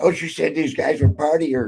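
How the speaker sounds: high-pitched grumbling. Speaker retells Leon complaining to a friend, in Leon's high-pitched voice. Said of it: "with that high pitched Leon voice".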